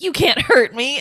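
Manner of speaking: usual speaking voice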